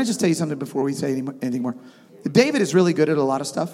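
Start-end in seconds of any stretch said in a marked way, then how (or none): none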